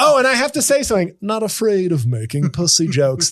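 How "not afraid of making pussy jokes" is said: put-on condescending voice. Joking about a podcast guest: Ron Reagan Junior impression. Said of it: "my Ron Reagan Junior impression".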